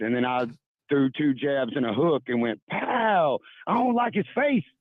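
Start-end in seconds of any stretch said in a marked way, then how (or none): 2.7-4.6 very high, worked-up, fired-up outburst. Retelling a fired-up outburst while watching a game: imitating own fired-up outburst. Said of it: "Marcus just got me fired up".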